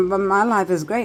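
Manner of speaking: ordinary talk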